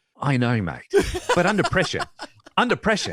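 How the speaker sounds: put-on Australian accent with swooping pitch. Urged by the other speaker to do the accent, a put-on Australian accent. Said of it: "You sound like Mel Gibson in Lethal Weapon".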